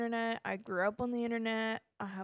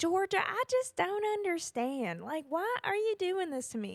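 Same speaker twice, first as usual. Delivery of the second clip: laid-on fake Southern drawl, pitched up; 8 semitones higher than usual. Describing a Netflix show's main character, doing Georgia's fake Southern accent. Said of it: "It's clearly a fake Southern accent".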